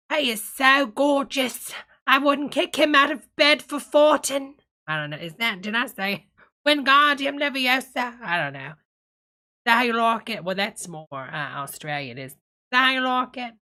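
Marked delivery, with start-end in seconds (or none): 0.1-4.5 put-on queenly voice, higher, louder. Trying a line again for fun, in Mrs. Doubtfire Queen of England voice. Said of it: "Mrs. Doubtfire, Queen of England voice".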